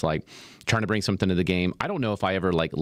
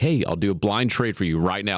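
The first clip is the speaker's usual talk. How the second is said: put-on sarcastic tone. Retelling a joke made at the fare gate: retelling a sarcastic quip. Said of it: "I always say something sarcastic".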